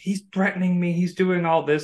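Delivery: acted-out scream. Telling a story, acting out a woman screaming at a man: retelling a scream. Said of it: "she's like screaming at him".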